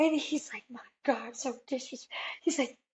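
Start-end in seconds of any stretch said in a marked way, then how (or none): 0.7-2.2 quiet, mad, disapproving scolding mutter. Retelling how a man picked up the phone all mad, imitating someone mad. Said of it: "picks up the phone all mad".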